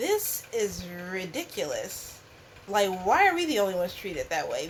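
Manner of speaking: usual speaking voice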